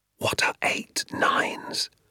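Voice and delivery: hushed, breathy, barely audible, very soft whisper. Narrating someone covering his mouth to ask the narrator, very soft whisper. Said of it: "whispered very softly to me".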